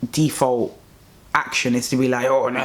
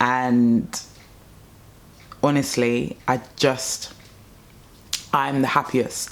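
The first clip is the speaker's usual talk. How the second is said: choking up, on the verge of tears. Talking about what they went through and where they are now, on the verge of tears. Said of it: "I feel like I'm gonna cry".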